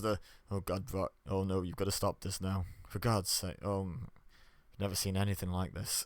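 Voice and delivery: serious, understated commentator voice. Watching the refs come out, mimicking the commentators, low, understated commentator voice. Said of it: "the low, understated voices".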